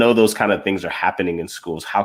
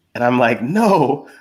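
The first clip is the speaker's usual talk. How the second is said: ordinary talk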